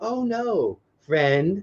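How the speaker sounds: put-on gentle, soft, high, toddler-friendly voice. Imitating a daughter scolding the dog like on a TV show. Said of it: "and she's like".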